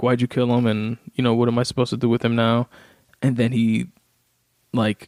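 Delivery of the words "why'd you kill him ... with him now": tearful, crying, sobbing voice. Retelling a comedian's bit where a son cries: imitating a crying son. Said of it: "crying, like".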